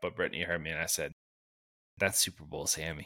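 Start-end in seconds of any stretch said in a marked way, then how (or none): 2.0-3.1 quiet under-breath mutter, much lower. Retelling a remark made about a quarterback, muttering under the breath. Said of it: "lightly under my breath".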